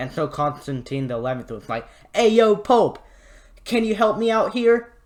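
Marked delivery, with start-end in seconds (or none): 2.1-4.8 bad, exaggerated, loud New York accent. Retelling someone's line in a story in a terrible New Yorker accent. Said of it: "I'm trying to make a terrible New Yorker accent".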